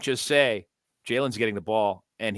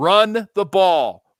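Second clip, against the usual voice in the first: put-on scream, higher and louder; 8 semitones higher, 9 dB louder than usual. Retelling watching the game on sunday: imitating own screaming. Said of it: "I was screaming".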